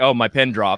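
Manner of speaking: normal talking voice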